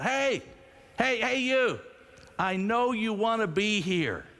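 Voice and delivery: put-on very high, big-voiced, drawn-out yell. Retelling how Larry called to a man heading back to his car, retelling Larry's big-voiced yell. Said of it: "Larry in his big voice yelled".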